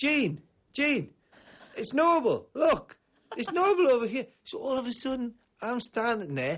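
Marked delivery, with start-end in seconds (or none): 0.0-4.3 high-pitched, drawn-out, loud calling shout. Telling a story, the speaker acts out a fan calling to his wife, imitating a man shouting. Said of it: "And he's shouting".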